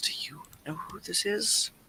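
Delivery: hushed, breathy, secretive whispered aside. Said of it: "to whisper to Trix".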